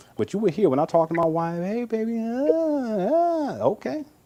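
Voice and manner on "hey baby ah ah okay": voice going up in pitch, very slow and drawn out. Showing how he greets his wife, his voice going up. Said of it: "it start going up there".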